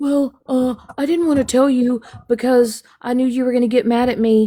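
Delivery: halting, muddled mumbling, stumbling over words. Retelling how Stephanie answered when confronted, imitating Stephanie mumbling. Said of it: "Stephanie was mumbling over words".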